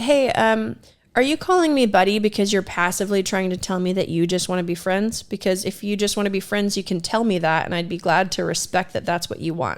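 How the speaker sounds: usual speaking voice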